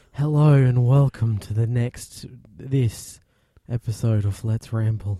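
eerie, spooky horror-trailer announcer voice. Co-host redoing the Let's Ramble episode intro as a horror-theme voiceover. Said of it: "Making it sound like it's going to be like a horror theme".

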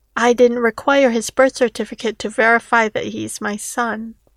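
ordinary delivery, nothing marked

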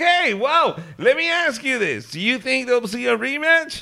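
very high, loud voice. Mock-interviewing a fighter right after a knockout win: Joe Rogan impression. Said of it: "that was a good Joe Rogan impression".

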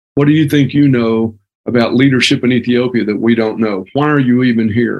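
plain

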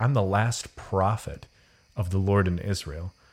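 normal talking voice

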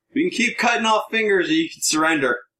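very high, loud shouting voice. Voicing a guard who calls down the hall: guard shouting down the hall. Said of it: "the guards basically shouts down the hall".

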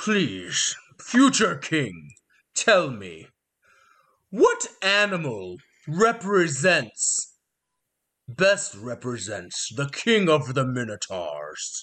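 put-on aged minotaur elder voice. Voicing an old, broken minotaur who starts a test: old minotaur voice. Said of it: "looks at you with squinty eyes and says".

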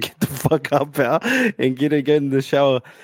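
normal talking voice

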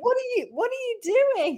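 high, laughing, puzzled dog voice. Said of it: "they were both like".

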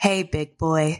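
gentle, soothing, seductive, sultry voice. Showing the other speaker how their voice could sound: very soothing voice. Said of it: "you just have this very soothing voice, like".

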